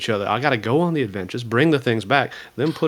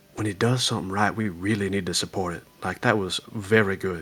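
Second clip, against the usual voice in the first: mock whisper, lower and quieter; 4 semitones lower, 5 dB quieter than usual. Retelling how someone leaned in to praise work: imitating a whisper. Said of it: "he leans in and kinda whispers".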